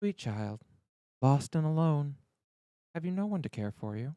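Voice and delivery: soothing, gentle, calming and comforting tone. Narrator voices a kindly smiling woman approaching the listener, in a soothing tone. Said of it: "speaking in a soothing tone".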